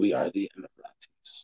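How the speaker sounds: whispered, hushed, menacing Arabic accent. Showing how a phrase sounds said a certain way: scary Arabic accent. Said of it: "If you say it with an Arabic accent".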